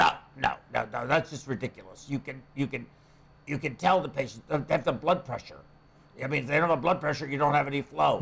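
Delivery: put-on very low, deep old man voice. Retelling a phone call with Doctor Robichek: imitating Dr. Robichek. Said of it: "he's an old Hungarian, uh, talks like that, you know, very low voice".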